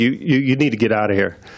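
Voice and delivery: imitated own real voice, very quiet. Retelling telling a big man to leave the store: imitating own real quiet voice. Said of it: "And I'm just real quiet".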